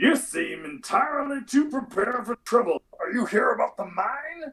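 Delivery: high-pitched Southern puppet voice. Voicing a townsperson asking adventurers about the mine: Southern Muppet voice. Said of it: "he sounds like a Southern Muppet".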